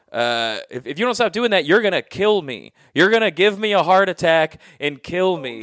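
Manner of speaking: fed-up screaming, like a grandmother. Recalling being punished as a little kid, imitating a grandmother screaming. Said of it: "her way of punishing me was screaming at me".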